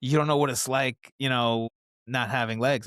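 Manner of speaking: ordinary delivery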